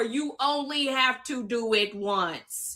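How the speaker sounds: slowed down, deliberate, word by word. Defending a woman called a one-hit wonder, saying it slower. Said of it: "I'm going to say it slower".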